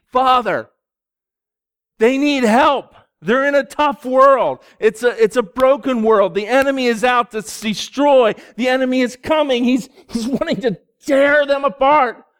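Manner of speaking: high, yelled, impassioned, urgent pleading cry. Speaker voices Jesus interceding with the Father for people, acting out a yelled plea. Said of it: "I'm sorry I'm yelling".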